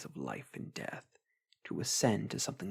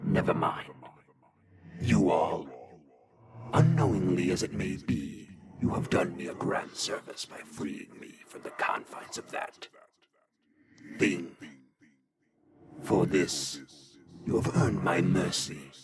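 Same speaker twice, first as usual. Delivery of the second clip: deep, loud lich voice, composed, regaining calm; 5 semitones lower, 7 dB louder than usual. Narrating a game scene, the freed lich addresses the group: calmed lich villain voice. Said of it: "Lich. / A skeletal visage, skin pulled tight around what muscles remain, and etched with the same runes as the amulet in rusty blood. Ears rotted and drooping from a bald skull. Robes of the finest si".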